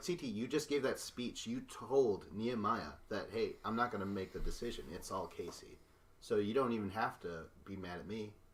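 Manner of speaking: plain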